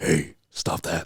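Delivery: dropped, deep, performed put-on voice. Asked to do the voice properly, deliver the line in a deep put-on voice. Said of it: "in a deep voice".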